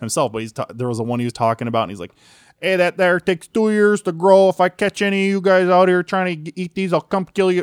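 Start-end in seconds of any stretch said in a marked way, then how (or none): 2.6-7.6 put-on high, loud, thick Chicago gangster accent. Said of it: "best, thickest Chicago accent you've ever heard".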